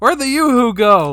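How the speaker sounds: very loud furious yell. Telling a story, acting out an ex's stepdad yelling downstairs, retelling a man's yell. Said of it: "I hear him just start yelling like".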